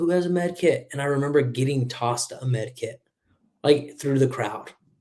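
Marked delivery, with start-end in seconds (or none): 0.0-0.9 yelled, called out with raised pitch. Retelling own call for a med kit while leaving, imitating yelling. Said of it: "I was yelling".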